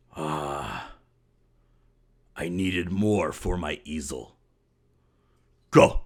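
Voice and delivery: low rumbling monster voice, drawn-out ah. A game master voices a monstrosity speaking to the players: rumbling monster voice. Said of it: "it just rumbles in this voice".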